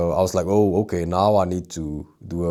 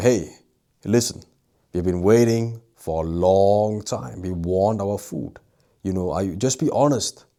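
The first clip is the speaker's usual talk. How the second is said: raised voice, deliberate, complaining tone; 2 semitones higher than usual. Retelling speaking up to a waiter about the long wait: retelling raising own voice. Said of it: "increased my voice".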